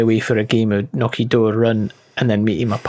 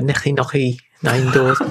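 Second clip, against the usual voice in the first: put-on Scouse Liverpool accent; 2 semitones higher than usual. Comparing how the phrase sounds in different accents: liverpool accent. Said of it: "Liverpool would be like".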